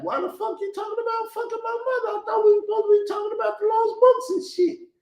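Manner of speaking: mock, very high, whiny crybaby whine. Imitating a rival's imagined reply in an argument: mock crybaby whining. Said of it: "he'd have sound like the goddamn crybaby".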